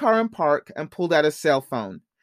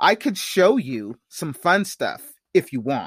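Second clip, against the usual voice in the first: usual speaking voice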